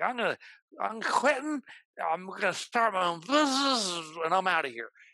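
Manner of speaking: mock drunk slurring. Recalling a drunk message left for the boss, retelling a drunk, slurred message. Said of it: "I left this like slurry".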